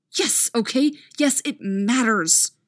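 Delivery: angry hiss. Casey answers the man who asked what Casey wants from him, angry hiss. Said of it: "Casey hisses, leaning in suddenly and eyes sparking with anger".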